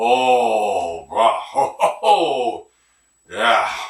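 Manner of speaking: speaking in broken local English.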